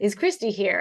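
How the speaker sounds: put-on very thick Dutch accent, laid on. Retelling how Rob asked for her at the power plant front desk, in Rob's thick Dutch accent. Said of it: "very thick Dutch accent".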